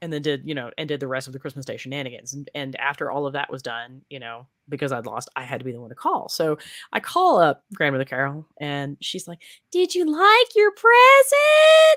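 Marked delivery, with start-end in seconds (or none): 9.7-12.0 shrill, high, dragged-out, devilish demonic voice. Retelling a phone call after Christmas presents: imitating Grandmother Carol. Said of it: "she talked like this".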